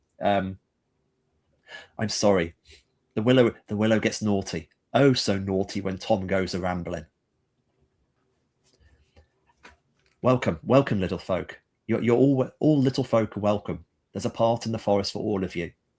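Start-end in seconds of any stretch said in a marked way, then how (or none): 2.0-15.7 warm, caring, gentle, nurturing storyteller voice. Voicing a voice in the forest that speaks to a player: warm, caring, nurturing voice. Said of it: "This voice, warm and caring and present and nurturing".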